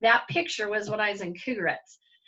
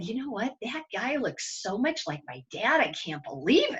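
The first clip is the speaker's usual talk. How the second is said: imitated whisper. Retelling whispering to the girl next to her: retelling a whisper. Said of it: "I had to whisper to the girl".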